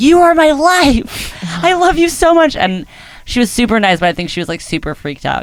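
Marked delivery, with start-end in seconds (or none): 0.0-2.6 very high, shrill, adoring, drawn-out fan scream. Retelling meeting someone important to the speaker, acting out a scream. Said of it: "I think I just like screamed like".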